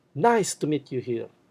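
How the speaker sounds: loud, high, punched stress landing on "nice". Greeting phrase example, loud high stress on nice. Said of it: "you pronounce them loud. You put stress in those words. You use your high pitch".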